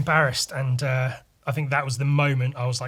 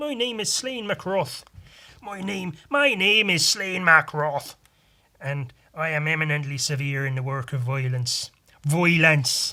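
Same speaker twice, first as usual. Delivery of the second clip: loud, slow stage Irish accent. Performing an irish stereotype, introducing a character while doing an irish accent. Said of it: "if I'm going to do Irish".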